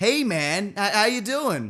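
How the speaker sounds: slow, loose, vague put-on American accent. Quoting a man who greeted them, a speaker does his: put-on American accent. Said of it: "I'm gonna do the Indian accent. No, American".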